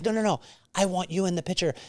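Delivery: put-on French accent, broken English, male voice. Retelling a man who wanted him in the photo, broken English, French accent. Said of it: "broken English, French accent".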